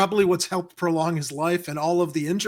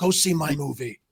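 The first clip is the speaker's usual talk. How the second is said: put-on grumpy old man voice, pitched lower; 3 semitones lower than usual. Doing an impression on his birthday: grumpy Harrison Ford voice. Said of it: "my grumpy Harrison Ford".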